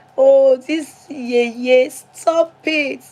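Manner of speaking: very thin, small, high little voice. Teasing someone who is now an auntie, imitating her very thin voice. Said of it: "with her very thin voice".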